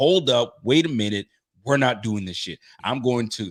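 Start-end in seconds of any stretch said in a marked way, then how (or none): none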